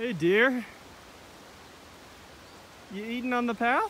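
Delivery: high-pitched voice.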